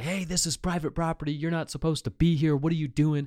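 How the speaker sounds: light, high-pitched scolding yell. Retelling a prank, quoting a man yelling at a stranger, retelling a yell. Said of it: "starts yelling at this guy".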